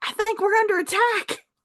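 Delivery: shrill, very high alarmed shout. The narrator voices a creature turning to the fox, shouting in alarm. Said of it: "and shouts".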